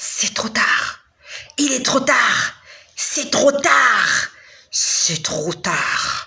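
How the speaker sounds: very slow, put-on, booming, thundering voice. Retelling a man's voice from above saying it's too late: imitating a thundering voice. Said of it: "ça tonnait".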